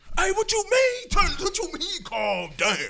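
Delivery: pretend worked-up voice. Acting out a response to being told to calm down: mock heated comeback. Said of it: "I'm not about to turn up".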